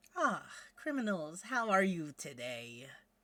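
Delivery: put-on lofty, very posh upper-class accent. A character seated at a desk in the visitors' room greets you, very posh voice. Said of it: "that's a very posh voice".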